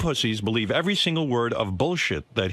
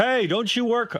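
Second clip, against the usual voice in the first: very high, teasing, jokey yell; 11 semitones higher than usual. Retelling how he called out to a woman ahead in line: retelling a yell. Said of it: "I yell out to her".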